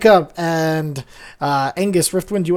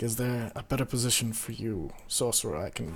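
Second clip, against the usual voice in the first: hushed whisper, lower and quieter; 7 semitones lower, 18 dB quieter than usual. Voicing a character who offers the sorcerer a better position: whispering. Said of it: "and he whispers".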